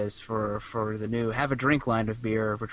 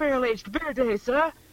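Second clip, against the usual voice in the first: put-on high-pitched young boy voice; 3 dB louder than usual. Playing the boy answering from the street: A Christmas Carol boy voice. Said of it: "let's stop doing, uh, A Christmas Carol".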